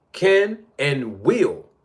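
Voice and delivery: slow, drawn-out, heavy stress on "will".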